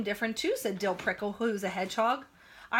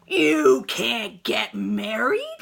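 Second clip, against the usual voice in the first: menacing storybook villain voice, loud, rough and swooping; 8 dB louder than usual. Reading a story aloud, voicing the stink bug's interruption: scary voice. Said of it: "said a scary voice".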